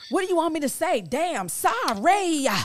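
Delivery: mock very high, loud, sing-song snarky sarcastic tone. Told to apologize and move on, the speaker retells a sarcastic apology. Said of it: "I did get sarcastic".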